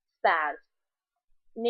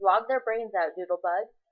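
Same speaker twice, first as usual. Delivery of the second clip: ordinary talk, nothing marked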